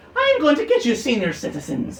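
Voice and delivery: very high, swooping put-on Irish leprechaun voice. Voicing a leprechaun trapped in a sack: irish leprechaun voice. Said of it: "my Irish accent, so more Irish, and then my leprechaun voice".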